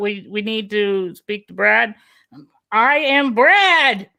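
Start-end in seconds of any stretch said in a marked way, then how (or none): 2.7-4.0 excited, keyed-up, high-pitched, climbing pitch. Retelling phone calls where he sounds like a woman: imitating his excited high voice. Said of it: "the more excited I get, the higher pitch I get".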